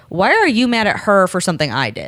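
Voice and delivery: ordinary talk, nothing marked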